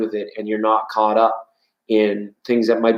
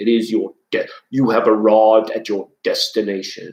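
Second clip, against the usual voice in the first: put-on deep movie villain voice. Quoting a famous line in a put-on voice: James Earl Jones voice. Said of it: "In my best, uh, James Earl Jones voice".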